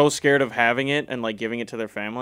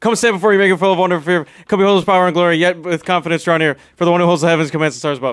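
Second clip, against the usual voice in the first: loud, breakneck, debate-style rattled-off rapid-fire reading; 6 semitones higher, 7 dB louder than usual. Showing how speed debaters read their points aloud: imitating very fast reading. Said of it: "they talk like this".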